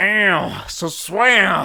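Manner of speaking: put-on Southern gentleman accent. Voicing an alien dressed like Colonel Sanders on a Georgia porch: Colonel Sanders-like Georgia porch voice. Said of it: "that same alien dressed up like Colonel Sanders sitting on a porch somewhere in Georgia".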